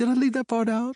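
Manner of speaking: squeaking falsetto, very high. Narrator reads Uncle Clams replying after admitting he left something out; high falsetto. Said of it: "he says in a high falsetto".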